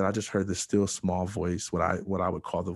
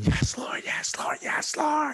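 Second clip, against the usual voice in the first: acted-out, drawn-out, breathy, whispered cry. Retelling crying out to god before a doctor ran in: imitating own screaming. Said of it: "I just kept screaming".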